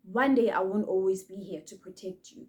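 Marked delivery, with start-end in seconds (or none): none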